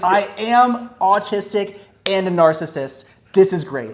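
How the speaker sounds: mock thrilled, hyped. Retelling a friend's hyped reaction at a poker table: imitating someone hyped. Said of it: "he's hyped".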